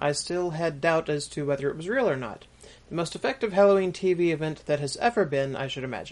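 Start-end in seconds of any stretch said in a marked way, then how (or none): none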